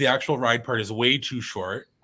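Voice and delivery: ordinary talk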